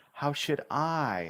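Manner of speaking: the word I drawn out. Demonstrating how to stress words while reading, stretching out I. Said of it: "I pick a word and I stretch it out".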